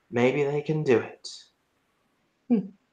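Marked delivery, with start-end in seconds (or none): 0.1-1.2 very soft, barely audible mutter under the breath. Voicing a character who speaks as the players leave: very soft, under her breath. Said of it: "she says very softly under her breath".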